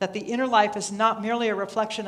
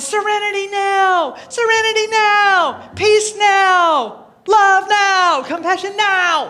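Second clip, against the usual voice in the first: put-on aggressive yelling, higher and louder; 11 semitones higher, 11 dB louder than usual. Explaining feeling like George Costanza's father in Seinfeld: yelling like George Costanza's father. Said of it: "I feel like George Costanza's father in Seinfeld. ... And I'm yelling".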